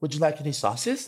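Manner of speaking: soft, polite, pleasant automated robot voice. Retelling what a digital machine asked them: pleasant robot voice. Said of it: "It had a very pleasant voice".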